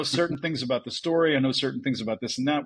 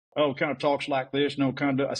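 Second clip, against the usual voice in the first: put-on Texas accent. Retelling a convention fan imitating their uncle, in a Texas accent. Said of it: "I bet you can do a Texas accent".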